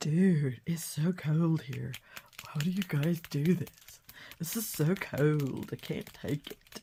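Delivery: very slow, dragging, drawn-out insect character voice. Giving lazy early hornets a voice for fun: voicing a hornet. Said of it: "That's a hornet talking".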